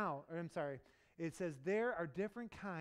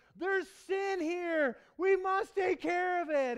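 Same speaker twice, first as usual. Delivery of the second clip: shrill, high-pitched yell at the top of the lungs; 13 semitones higher, 12 dB louder than usual. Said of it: "yelled out at the top of his li-".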